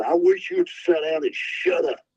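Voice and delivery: play-acted, light hollering call. Retelling what the man sitting behind Curb hollered at him, retelling a holler. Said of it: "this guy sitting behind him hollers at him".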